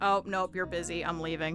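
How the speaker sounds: put-on cat voice. Speaking aloud for the cat as it walks away: voicing the cat. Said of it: "the cat has decided".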